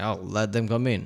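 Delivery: plain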